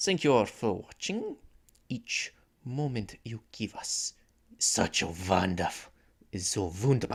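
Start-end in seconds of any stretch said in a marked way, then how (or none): 6.3-7.2 fake, put-on German accent. Host doing the doctor's voice while thanking viewers, put-on german accent. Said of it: "I couldn't resist doing a German accent".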